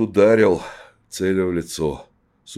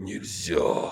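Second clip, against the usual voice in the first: soft, rasped, hoarse croak; 8 dB quieter than usual. A man pulling a narrow blade from his palm; rasped. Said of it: "прохрипел Тихомир".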